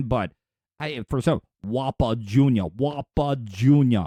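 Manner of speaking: low-pitched, badly faked Scottish accent. Trying the voice again after admitting to being bad at accents, bad Sean Connery impression. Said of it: "I can't do a Sean Connery impersonation".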